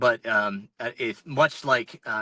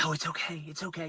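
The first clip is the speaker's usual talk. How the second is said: really hushed, very quiet, soft, pitched-up voice; 5 semitones higher, 10 dB quieter than usual. Retelling encountering bears during a race, in a really hushed voice. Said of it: "talking in this like really hushed voice".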